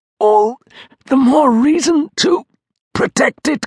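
very high exclaiming outcry. A narrator reads a mother's retort about protecting the law: crying out. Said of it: "cried Nan".

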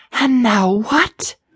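hoarse, high, rasping voice. A companion, with the heat and grimy air getting to him, speaks up: rasping. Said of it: "Quill rasped".

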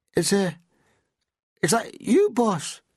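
very high, very slow, drawn-out, sheepish, embarrassed. Reading a man addressing his boss: sheepish. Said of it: "he said sheepishly".

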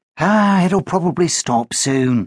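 with a sigh. [name] answers Danny's complaint about the rain, sighing. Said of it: "sighed [name]".

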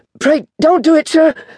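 very high, frightened begging. Seized by the chin by a glaring man, the narrator pleads in terror. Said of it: "I pleaded in terror".

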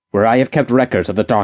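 ordinary delivery, nothing marked

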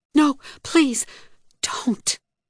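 gasped, pleading, pitched way up. Caught in a man's arms after losing her balance, she pleads, gasping. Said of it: "she gasped".

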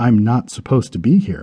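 ordinary delivery

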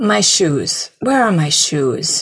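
slow, indistinct mumble. Narrator reads a recovering man groping around the floor: mumbled. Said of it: "he mumbled".

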